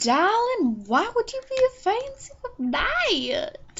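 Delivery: very high, bad, fake British accent. After warning british listeners, trying out a bad british accent. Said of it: "Oh, that was just bad".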